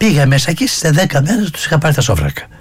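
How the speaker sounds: joking delivery said through a chuckle. Telling a story from his own past, laughing while saying it. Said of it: "Το λέω γελώντας αυτό".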